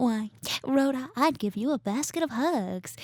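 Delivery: put-on slow, old-film-style motherly voice. Retelling a scene from The Bad Seed, imitating the mom in The Bad Seed. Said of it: "her mom's like".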